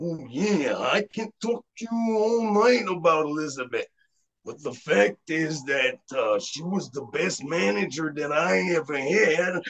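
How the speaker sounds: macho character voice, in character. Answering an interviewer's question about Elizabeth as Macho Man: Macho Man impression. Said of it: "une imitation".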